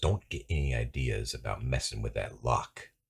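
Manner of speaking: very quiet, low voice hissed under the breath. Game master voicing Ross Kelly's last words to the player before she leaves, hissing. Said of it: "she kind of hisses it at you".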